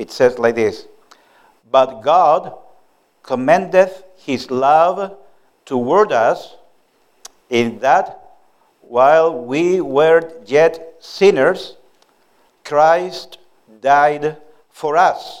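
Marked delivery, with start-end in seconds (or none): 1.7-15.4 slow, careful, every word taken slowly. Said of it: "read it slowly and carefully".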